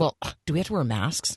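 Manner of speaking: disgusted tone dripping with disdain. Retelling a woman looking for a church asking about masks, mock-disgusted question. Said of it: "like with some disgust in her voice".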